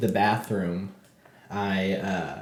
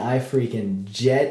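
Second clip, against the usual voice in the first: ordinary talk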